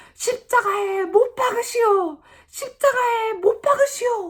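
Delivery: high, loud outcry from a crowd of voices.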